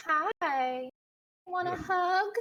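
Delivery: smiling little doll voice, very high, slow, drawn out. Voicing a doll that smiles and reaches out to a player: voicing a smiling doll. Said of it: "And she says".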